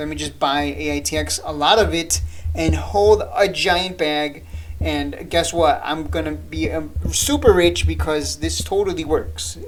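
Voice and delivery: ordinary talk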